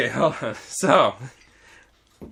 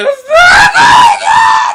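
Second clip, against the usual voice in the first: put-on very high, loud, slow girl's shriek. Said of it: "So it's open, she's like".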